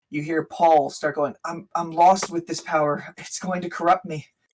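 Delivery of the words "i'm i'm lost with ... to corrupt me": nervous, worried voice. Narrator voices Paul among the voices heard nearing the city, panicked and worried. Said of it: "you can hear the panic and the worry in their voice".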